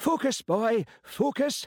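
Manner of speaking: put-on very high, shrill, shouted Highland accent. Narrator reads an inspector reprimanding his officer: shouting in high-pitched Highland accent. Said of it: "MacLeod had shouted in his high-pitched Highland accent".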